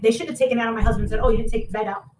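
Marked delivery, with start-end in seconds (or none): none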